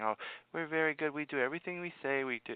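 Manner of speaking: put-on high, soft childlike voice. Retelling how a woman very afraid of the doctors spoke, imitating her talking like a child. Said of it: "you heard her talking like a child".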